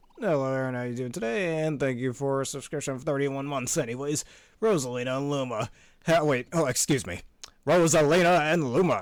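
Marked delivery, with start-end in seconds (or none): 7.7-8.9 loud, grand, announcer-style delivery. Announcing a newly playable character: Smash Bros announcer voice. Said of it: "like the Smash Bros announcer".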